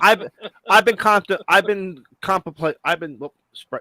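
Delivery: high stutter, restarting the word over and over. Starting to tell the others what gift would be given: stuttering. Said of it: "I'm stuttering here".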